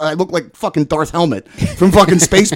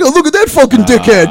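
loud, high, mocking teenage jeer; 8 semitones higher, 6 dB louder than usual. Retelling what teenagers said after a fall: imitating mocking teenagers. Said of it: "making fun of me".

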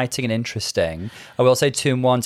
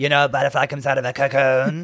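husky put-on imitation voice. Riffing on a cocoon look, doing a husky Jasmine Masters impression. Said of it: "Her voice is not that husky".

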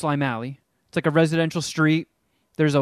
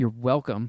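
low muttered aside under the breath; 4 semitones lower, 5 dB quieter than usual. Retelling what he said while checking his mail: imitating a mutter under the breath. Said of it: "I hear him mutter under his breath".

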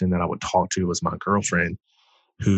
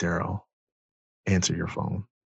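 small, soft, hushed half-whispering voice; 5 dB quieter than usual. Recalling a small voice that half-whispered to him on the road, small half-whispering voice. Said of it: "this little small voice whisper to me".

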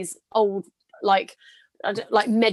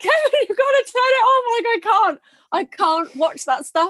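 mock howling sobs, much higher and louder; 13 semitones higher, 4 dB louder than usual. Retelling bursting into tears and begging Kevin to turn it off: imitating own howling crying. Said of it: "I was like howling like it was my child".

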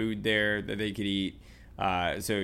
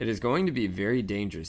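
plain

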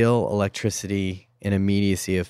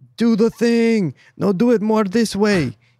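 put-on Eastern European accent, pitched up; 14 semitones higher, 6 dB louder than usual. Speaker explaining a director's job, imitating a dictator in an eastern european dictator accent. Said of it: "what accent is that?".

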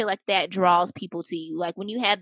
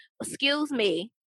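put-on entitled woman voice; 5 semitones higher than usual. Joking about snitching to the cops: put-on Becky voice. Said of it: "I'm turning right into, um, a little Becky".

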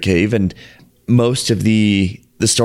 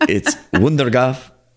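clumsy, bad Dutch accent with coughed ending; 4 semitones higher than usual. Explaining how a cave's name is said, the speaker uses an attempted dutch accent. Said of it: "with my best Dutch accent".

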